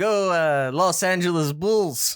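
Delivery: put-on mock Russian accent. Player staying in character with the group, in a mock Russian accent. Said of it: "You've had a Russian accent this whole time?".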